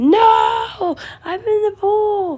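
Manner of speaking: very high, long, stretched-out, drawn-out yelling. Retelling how a friend kept insisting, imitating someone yelling. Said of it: "He was actually yelling like".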